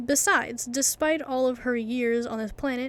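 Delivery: plain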